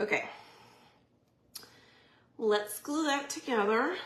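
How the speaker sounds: breathless, winded. Getting back to gluing the pieces together, out of breath. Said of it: "I'm totally out of breath".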